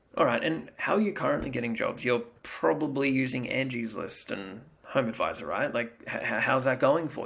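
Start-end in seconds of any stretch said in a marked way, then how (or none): 6.0-7.2 curious, inquisitive, with emotion. Showing how to ask a client about getting jobs: curious, with emotion. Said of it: "Curiosity, right? Put some emotion in".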